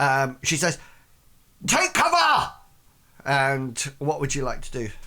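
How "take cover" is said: very high, sharp, shouted cry of alarm. Voicing a wounded character warning a player's character: shouting a warning. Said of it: "she just shouts out at you".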